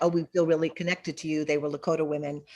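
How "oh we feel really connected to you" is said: ordinary talk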